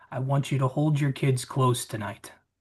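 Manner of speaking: menacing, hushed half-whisper. Playing a character leaning in to an islander: half-whispering a threat. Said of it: "I kinda lean in and whisper".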